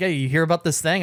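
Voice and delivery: ordinary talk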